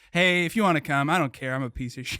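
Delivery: mock self-deprecating, shrugging tone. Imitating a friend brushing off his own birthday party: imitating someone downplaying himself. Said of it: "you downplay shit so much".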